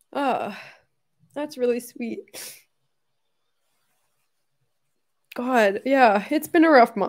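speaking through tears. Thanking everyone for a thoughtful gift, crying while talking. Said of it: "Just give me a second".

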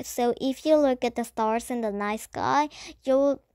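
plain

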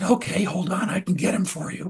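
ordinary delivery

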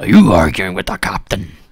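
put-on very loud, pirate-accented dwarf captain voice. Game master voicing the dwarf ship captain to a player: dwarf captain character voice. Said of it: "is [name]. And he's wearing a captain's hat. And it looks a bit out of place on him. Looks like it shouldn't belong on his head. And you can see that it's a dwarf. ... Arr, I'm sorry, but I gave the last spots away to [name]. ... That's the most growling toilet brush I've ever heard of".

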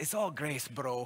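put-on Irish accent. Quoting a loving old man's favorite saying, in his irish accent. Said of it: "He has an Irish accent".

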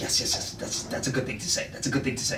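mock hushed, soft, low approving whisper.

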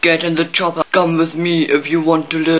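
action-movie robot voice. Speaker asks the audience for comments, doing a Terminator impression. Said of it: "do I sound like the Terminator?".

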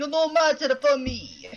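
put-on terrible Russian accent. Repeating a game line in a joke accent: terrible russian accent. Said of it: "I went a bit more Italian with that".

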